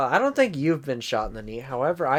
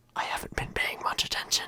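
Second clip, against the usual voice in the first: hushed, breathy whisper close to the mic. Imitating a speech moment where the speaker whispers into the mic: whispering Biden impression. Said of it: "the freaking Biden speech thing".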